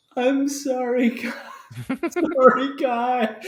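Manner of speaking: mournful, sorrowful, very slow and drawn out. Narrating Pantheon apologizing after crunching your glasses, as Pantheon's sorrowful apology. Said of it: "she looks up at you just so like full of sorrow".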